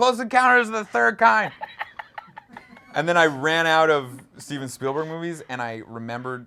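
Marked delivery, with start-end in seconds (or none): 0.0-1.5 very high, shrill, loud screamed shout. Retelling swinging on a religious artifact in class: screaming, retelling own past yell.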